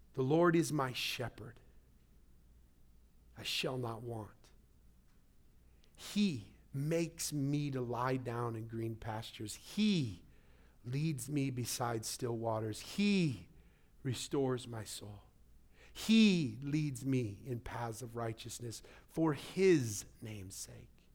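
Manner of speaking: slow, unhurried reading aloud. Reading Psalm 23 aloud to listeners after a prayer, reading slowly. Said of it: "I'm going to read it slowly".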